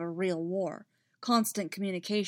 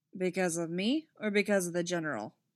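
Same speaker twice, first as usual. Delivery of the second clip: dry delivery. Told a plan is a bad idea, a captain asks the objector why, dry. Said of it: "Rex said dryly".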